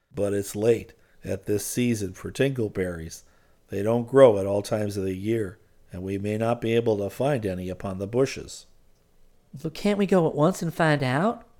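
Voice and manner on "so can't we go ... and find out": worried, eager, anxious, pitched up. Twinkle puts an anxious question to the other speaker. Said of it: "Asked Twinkle anxiously".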